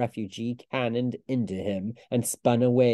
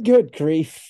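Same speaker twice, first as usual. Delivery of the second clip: gasping and louder; 5 semitones higher, 8 dB louder than usual. A man among falling embers and burning rooftops, gasping. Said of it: "he gasped".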